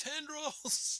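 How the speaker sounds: very high, alarmed shriek. Acting out a character spotting vines, the Donald Sutherland Body Snatchers scream. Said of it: "I do the, uh, Donald Sutherland thing from Invasion of the Body Snatchers".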